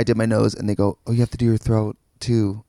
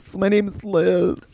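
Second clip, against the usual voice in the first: put-on pitched-up hipster art-kid voice; 9 semitones higher than usual. Describing a college roommate, imitating Liz's voice. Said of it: "she kind of had this kind of voice".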